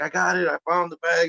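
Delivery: very high, thrilled, excited shout. Retelling how a rookie cop reacted on finding the bag, imitating an excited shout. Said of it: "He was like all excited".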